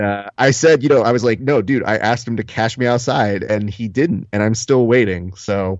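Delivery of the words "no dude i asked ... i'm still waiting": usual speaking voice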